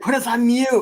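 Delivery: frantic, high-pitched, flipping-out freak-out. Retelling how he reacted when they were heard too early, imitating someone flipping out. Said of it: "He's flipping out".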